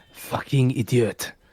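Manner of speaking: hushed, muttered whisper under the breath. Voicing a whisper the players hear as they move forward: whispering. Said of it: "you just hear the whisper".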